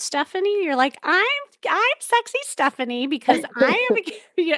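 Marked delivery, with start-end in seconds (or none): 1.0-4.6 high, sweet, cute, quick little voice. Working on Stephanie's tonality, show her how she sounds, imitating Stephanie's cute tone. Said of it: "You're like... it's very like cute".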